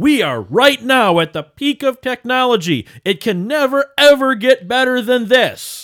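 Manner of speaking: high, loud mock proclaiming voice.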